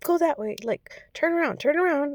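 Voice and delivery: high-pitched yelling. A parent retells how her daughter's dance teacher was kind of yelling instructions. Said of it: "kind of yelling at her".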